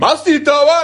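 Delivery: mock, very high, loud, shrill screaming fit. Retelling how a man in line started yelling at him, imitating a man screaming. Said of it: "He starts screaming at me".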